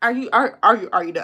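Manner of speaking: stammering, stuttering, repeating the words. Speaker addressing the audience, stuttering over the words. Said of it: "I'm stuttering".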